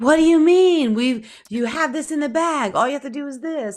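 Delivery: very high-pitched yelling. Imitating a mother yelling at her: imitating mom yelling. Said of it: "yelling at her".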